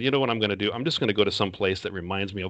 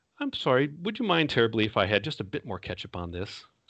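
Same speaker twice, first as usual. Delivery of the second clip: put-on nicest, most polite sing-song tone; 3 semitones higher than usual. Retelling going up to ask a woman for something; acting out a very polite request. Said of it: "it's the nicest way I can".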